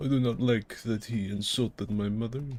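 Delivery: put-on German accent. Imitating a German viewer reacting to the video: imitating a German person. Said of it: "A German person would see it and be like".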